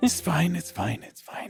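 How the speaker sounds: mumbling, muttering under his breath. Voicing a guard walking away after an awkward talk: mumbling under his breath. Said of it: "you can hear him mumble under the breath".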